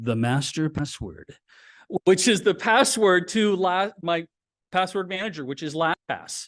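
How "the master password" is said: dark, foreboding, ominous tone in a very deep voice. Explaining a password manager, naming the one password to remember: ominous. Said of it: "I have to say it ominously".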